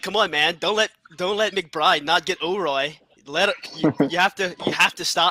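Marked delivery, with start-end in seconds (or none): none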